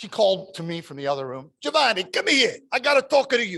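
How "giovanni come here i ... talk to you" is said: put-on thick Italian accent, very high-pitched. Retelling his grandmother calling him from the other room: heavy Italian accent. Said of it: "This heavy Italian accent".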